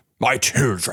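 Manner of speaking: weighty, solemn, grand English voice with gravitas. Retelling how the talking lion in a film spoke: gravitas English voice. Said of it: "gravitas English voice would say".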